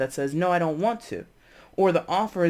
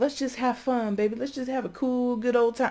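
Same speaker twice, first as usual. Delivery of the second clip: high, jive-talking nineteen-seventies patter; 7 semitones higher than usual. Acting out someone making an offer: 1970s jive voice. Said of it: "this nineteen seventies jive shit".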